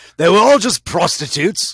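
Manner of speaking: loud, high-pitched fake British accent. Joking with co-hosts, repeating the punchline in a faux british accent. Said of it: "your faux British accent".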